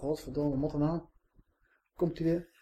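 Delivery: feigned bored tone. Imagining a bored audience in a lecture hall watching slides, imitating a bored audience. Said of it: "Allemaal verveeld toe zitten".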